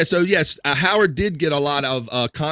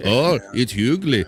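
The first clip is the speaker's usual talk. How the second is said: put-on English accent; 3 semitones lower than usual. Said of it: "he always does his [name] accent".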